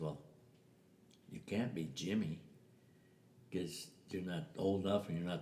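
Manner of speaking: normal talking voice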